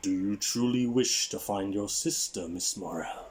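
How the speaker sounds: composed, untroubled, steady calling voice. Narrating a story, a voice in the room calls to miss morell: calm yet booming voice. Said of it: "a calm yet booming voice calls".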